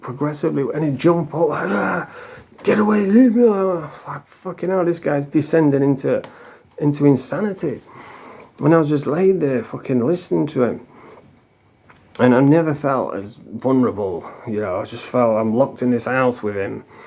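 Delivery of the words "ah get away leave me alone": play-acted, wild, high-pitched screaming outburst. Retelling how a man screamed all night about little green men: imitating him screaming. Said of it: "he was screaming".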